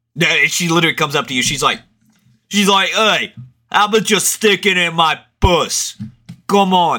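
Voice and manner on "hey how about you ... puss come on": put-on Boston accent slipping into Italian, pitched higher. Acting out a woman from boston at dinner: put-on boston accent. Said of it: "More of Italian accent".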